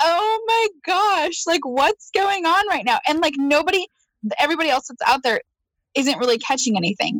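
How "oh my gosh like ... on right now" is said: play-acted thrilled, amazed outburst, pitched up. Retelling catching a second, bigger fish while fishing, retelling own excited amazement. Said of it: "And I'm like".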